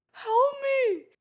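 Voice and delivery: put-on pleading, very high, loud and plaintive. Retelling hearing Joey in the shower: imitating Joey loudly calling for help. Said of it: "I start hearing Joey loudly go".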